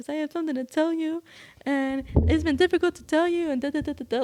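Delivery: mock tearful, crying speech, talking through tears. Retelling coming out to someone, the speaker quotes his past self: retelling talking while crying. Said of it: "I start crying because I was like".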